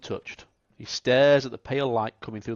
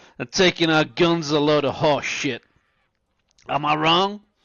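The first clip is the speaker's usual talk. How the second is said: put-on drunken shout, higher and louder; 3 semitones higher, 6 dB louder than usual. Voicing a drunken ranch hand who shouts at the saloon: drunk ranch hand shouting. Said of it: "he shouts".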